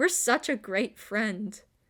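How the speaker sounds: sarcastic tone. Reading a game character's thought aloud, sarcastic. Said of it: "that was sarcastic".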